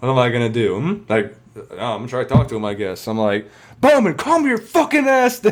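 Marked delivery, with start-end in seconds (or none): 3.8-5.5 acted yelling, much higher pitch. Retelling confronting an enraged drunk who is bigger, retelling a yell. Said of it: "And I'm just like yelling at him".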